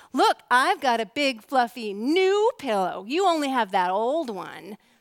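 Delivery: slow, gloating taunting. Retelling taunting a sister with a new pillow: imitating taunting. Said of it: "I taunted my sister".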